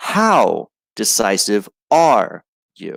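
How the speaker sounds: strong stress on how and are. Teaching sentence stress with a question, stress on how and are. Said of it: "I italicize the words how and are".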